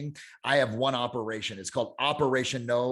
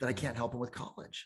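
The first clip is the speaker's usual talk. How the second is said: mock tearful crying, quieter; 9 dB quieter than usual. Retelling a mother talking to her cousin while crying: imitating someone crying. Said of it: "watch the tears coming down her eyes".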